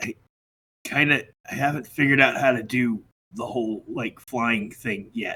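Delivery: confiding, soft, breathy, hushed half-whisper. Voicing a character who leans in close to a player: half-whispering in character. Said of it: "and whispers".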